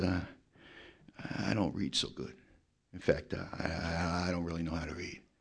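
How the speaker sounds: sheepish, very low, soft, hushed, drawn out. Retelling Donnie's reply when told it was his turn to read, in Donnie's lowered voice. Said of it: "looks down on the floor and lowers his voice".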